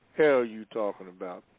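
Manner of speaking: ordinary talk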